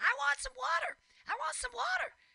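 mock screaming, pitched very high. Retelling how a woman alone on a street corner screamed: imitating someone screaming.

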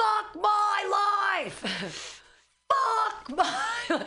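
put-on very high, slow yell, "my" stretched long. Retelling what a man yells at his own reflection, imitating his yell. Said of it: "he yells".

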